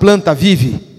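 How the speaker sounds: low, firm, commanding proclamation.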